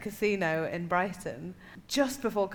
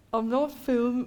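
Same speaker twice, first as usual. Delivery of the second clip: put-on Birmingham-accented speech. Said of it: "just trying to be the accent".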